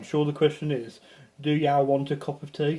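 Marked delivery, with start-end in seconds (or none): none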